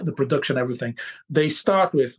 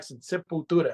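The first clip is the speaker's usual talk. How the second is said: Brazilian pronunciation; 2 semitones higher, 4 dB quieter than usual. Naming the band the proper way: Brazilian accent on Sepultura. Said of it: "my proper Brazilian accent".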